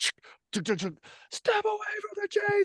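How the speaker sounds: play-acted sharp, harsh yell, very high-pitched. Retelling the soldier's immediate response to the kid: imitating a harsh yell. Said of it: "it was immediate and harsh".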